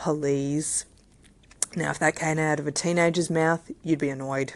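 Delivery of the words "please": mock sarcastic tone on please. Retelling how a two-year-old asks for things: imitating a facetious please. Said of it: "a really facetious please".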